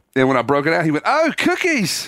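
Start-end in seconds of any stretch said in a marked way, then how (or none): 1.0-2.1 put-on Australian accent, voice way up high. Retelling a coworker's reaction to food: imitating an Australian accent. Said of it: "He's British?".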